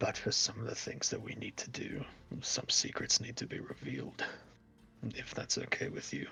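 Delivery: whispered words. Kneeling beside a seated character and speaking in his ear: whispering in character. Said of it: "kinda whisper to him".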